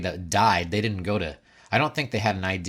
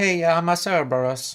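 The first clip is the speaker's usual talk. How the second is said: put-on Italian accent, very high; 9 semitones higher, 4 dB louder than usual. Showing someone how to say cerberus, in a put-on italian accent. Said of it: "Say it with an Italian accent".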